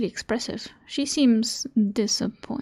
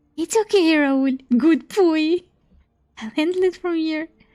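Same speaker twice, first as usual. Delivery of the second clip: high, firm yet oddly affectionate puppy voice; 6 semitones higher, 5 dB louder than usual. A woman in the story speaks to raoul, talking-to-a-puppy voice. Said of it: "her puppy voice".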